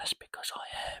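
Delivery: quiet, unvoiced late-night whisper.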